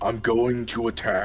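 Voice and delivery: really deep, booming voice. Asked by another player to declare the attack: really deep voice. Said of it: "a really deep voice".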